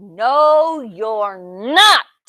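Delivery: growling troll voice, drawn-out no. Reading a fairy tale, the troll answers the goat: growling troll voice. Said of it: "growled the troll".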